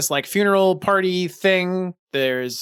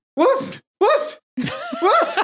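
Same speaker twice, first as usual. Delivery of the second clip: dog barking, higher. Answering an order to bark while playing a half-dog character: barking like a dog. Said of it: "Now bark".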